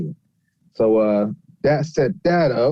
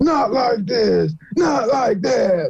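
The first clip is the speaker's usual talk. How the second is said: put-on wrestling commentator voice, higher; 9 semitones higher than usual. Riffing on a wrestling show with the others: JR voice. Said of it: "You gotta do your J R voice".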